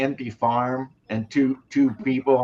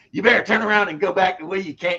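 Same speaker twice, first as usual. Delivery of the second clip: put-on higher voice, Kentucky accent; 7 semitones higher than usual. Retelling a comedy sketch, imitating a Kentucky guy. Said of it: "that's how he did the Kentucky guy".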